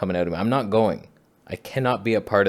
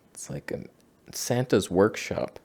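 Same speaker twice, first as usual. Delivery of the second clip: usual speaking voice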